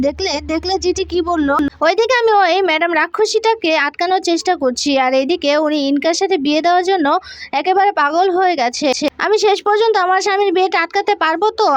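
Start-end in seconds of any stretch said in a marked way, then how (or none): none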